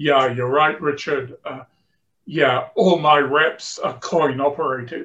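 gruff, growly, rough voice. Speaker recalls a sales manager at the back of his seminar answering him; retelling a growl. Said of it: "and he growled".

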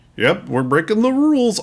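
very high, cartoon-dog style character voice. Showing a line Goofy never said in the cartoon, Goofy voice. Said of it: "That's too good of a Goofy".

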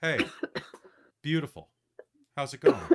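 friendly tone, same pitch, broken up by deliberate pauses. Speaker demonstrating how pauses change the same greeting, with added pauses. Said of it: "changing the way you say it just pauses".

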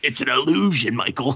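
dark, sinister, menacing voice. Imitating Will Arnett's sinister-sounding voice: Will Arnett sinister voice. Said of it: "he does have that sinister sounding voice".

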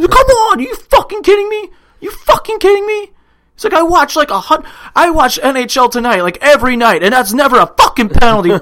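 very high whine, voice cracking. Retelling a player's complaint over a penalty: imitating Crosby whining, voice cracking. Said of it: "he starts whining so bad that his voice cracks".

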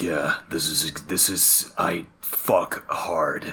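low husky voice, very slow, dragged out. Imitating how the newer Batman talks: husky low Robert Pattinson Batman voice. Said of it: "a little lower, a little deeper".

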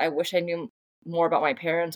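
plain

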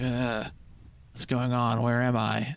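very slow, dazed, half-awake, groggy confusion. Narrating a game, voicing a character who just came to: groggy, just waking up. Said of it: "he's like kind of groggy".

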